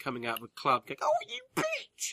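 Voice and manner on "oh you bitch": very high, shrill, catty shouted shriek. Imagining women leaving a club at three in the morning: imitating women in a cat fight. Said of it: "having a cat fight at three in the morning".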